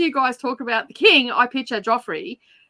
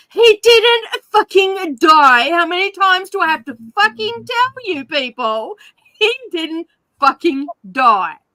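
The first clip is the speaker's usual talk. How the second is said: acted, put-on yelling, louder; 6 semitones higher, 5 dB louder than usual. Showing a listener the tone and asking if it was right, re-enacting yelling at the tv. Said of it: "yelling at the T V".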